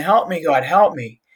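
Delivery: plain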